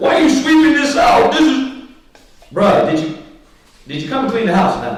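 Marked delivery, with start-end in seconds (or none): 0.0-1.9 put-on high-pitched indignant yell. Acting out someone objecting to the house being swept: imitating someone yelling. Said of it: "you can't yell at me".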